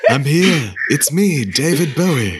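deliberate high, slow, drawn-out possessing spirit voice. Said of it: "he took over [name]'s body".

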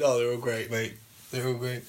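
fast, scornful, disdainful, dismissive tone. Echoing the other speaker's remark back at him, mocking a disdainful tone. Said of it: "The disdain in your voice".

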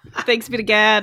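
put-on real heavy Chicago accent. Retelling the response everyone said in church, real Chicago accent. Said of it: "In this real Chicago way".

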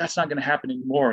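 play-acted heated, intense, furious, angry delivery. Retelling a teammate's rant after striking out: imitating an angry, intense teammate. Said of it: "he is so intense".

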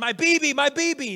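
very high, very slow, drawn-out tearful crying yell. Retelling the moment at the car, imitating Maylee crying and yelling. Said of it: "Maylee just begins crying, and she's yelling".

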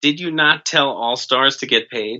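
ordinary talk, nothing marked

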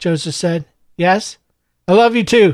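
plain

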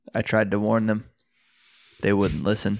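acted flat, dead-serious tone. Retelling how Elon answered when asked what he thought: dead-serious monotone. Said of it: "he was like a fucking monotone, dead serious".

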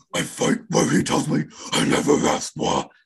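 rough, creaky, guttural death metal growl from deep down. Rereading a poem's line as a metal lyric: death metal growl. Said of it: "that's how you fucking wreck a voice".

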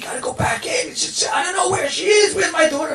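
mock very high-pitched, shrill shouting. Retelling a mother yelling at a man on the beach: imitating someone yelling. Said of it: "starts yelling at the man".

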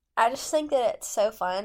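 normal talking voice

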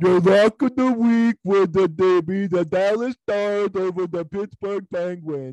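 squeaky, very high-pitched voice. Asked to do it one more time, imitating the other speaker's voice. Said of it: "That sounds just like you".

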